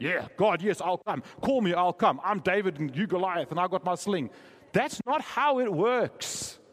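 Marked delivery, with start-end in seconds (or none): 0.0-4.3 put-on, semi-Afrikaans accent. Voicing someone's eager reply to god, in a semi-afrikaans accent. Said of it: "I sort of morph into a semi-Afrikaans voice when I do that".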